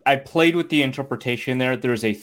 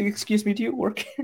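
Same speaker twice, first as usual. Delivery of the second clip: soft, pitched-up, overly courteous Minnesota dad voice; 8 semitones higher, 6 dB quieter than usual. Recalling a man politely asking a Barnes and Noble worker, imitating a polite Minnesota dad. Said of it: "Like in the most polite".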